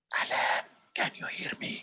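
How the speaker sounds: soft whispered voice. Demonstrating voice use, the speaker whispers a question to Alan, whispering. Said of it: "I'm whispering to Alan now".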